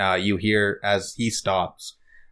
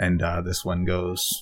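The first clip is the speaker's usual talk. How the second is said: ordinary talk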